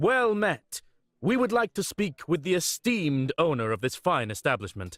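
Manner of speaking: strangely stiff, stilted, off-kilter way of speaking. Asking a child at an inn to speak with the owner: speaking like a weirdo. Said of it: "why does your friend speak like a weirdo?".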